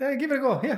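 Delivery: exaggerated Irish accent.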